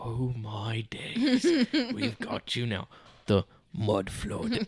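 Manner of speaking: put-on very slow, very drawn-out British accent. Imitating a British creator on TikTok talking about the mud flood. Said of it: "this British dude, and he's just like".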